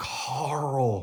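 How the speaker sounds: single word, drawn out and stretched slowly. Showing an impression of Rick calling his son: Rick impression. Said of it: "here's my impression of Rick".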